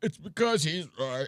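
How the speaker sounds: breathless, high, gasping voice, sounding about to be sick. Imitating a speaker in a clip who sounded about to die: imitating a breathless, dying voice. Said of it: "It sounded like he was about to die".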